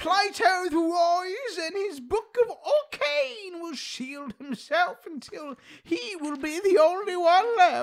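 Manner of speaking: put-on, very high, slow, nerdy British accent. Reading a line aloud, in a nerdy British accent. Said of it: "I gotta do nerdy and British".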